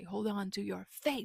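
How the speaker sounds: put-on loud voice. Retelling how a teacher stressed a line in his songs: imitating a teacher saying it loud. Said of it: "he would say it really loud".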